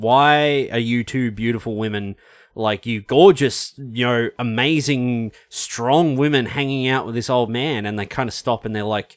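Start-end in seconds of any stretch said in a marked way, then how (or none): none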